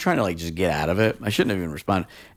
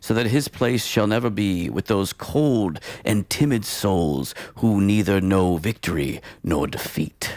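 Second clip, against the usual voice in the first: put-on old English, old-timey reading voice. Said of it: "should I read it, like, in a, in a, in old English?".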